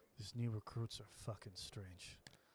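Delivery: put-on mumble under the breath. Speaker retelling what a man said while he looked around: retelling a mutter under breath. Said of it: "under his breath he goes".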